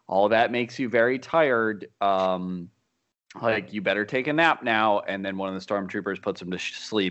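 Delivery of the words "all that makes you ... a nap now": usual speaking voice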